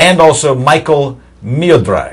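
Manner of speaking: put-on Russian accent on the names. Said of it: "Not a bad Russian accent you're using there".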